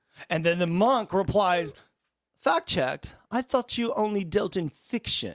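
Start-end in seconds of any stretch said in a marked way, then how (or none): 2.4-5.4 haughty, superior, snobby and condescending tone. Retelling a monk's reply to a writer who needs fact-checking, mock-snobby monk voice. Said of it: "Very snobby and very".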